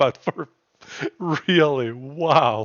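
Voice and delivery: talking through laughter. Apologizing for laughing at another player's attack, laughing while talking. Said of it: "I'm sorry I'm laughing".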